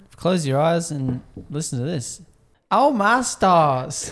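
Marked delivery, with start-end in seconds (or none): 2.7-4.1 fake American accent, high and loud. Speaker telling listeners to close their eyes and listen, put-on American accent. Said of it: "you're a good really American good".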